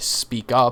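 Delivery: normal talking voice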